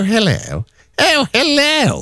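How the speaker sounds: very high, put-on posh telephone voice. Imitating a colleague answering the phone, in her posh telephone voice. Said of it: "the posh telephone voice".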